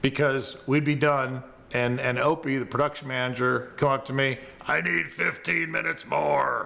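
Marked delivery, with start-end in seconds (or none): 4.7-6.7 rough, creaky put-on voice. Telling a story about the production manager, Opie impersonation, deep voice. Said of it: "I'm doing my Opie impersonation. ... he's got kind of a deep voice".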